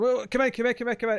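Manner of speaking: mock frantic, high-pitched, repeated, urgent tone. Retelling film characters letting a pizza guy in: imitating frantic speech. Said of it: "frantically saying".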